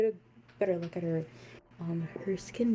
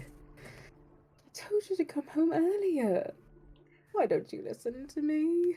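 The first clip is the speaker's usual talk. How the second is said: crying, very high, tearful reproachful tone; 10 semitones higher than usual. Game master voicing a player's mother hugging her returning child, crying while scolding. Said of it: "she's already crying".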